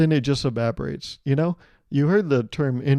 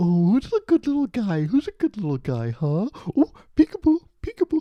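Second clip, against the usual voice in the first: put-on high sing-song baby talk; 7 semitones higher than usual. Retelling how people talk to pets and babies, imitating baby talk. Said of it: "they're like".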